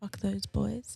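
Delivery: hushed aside.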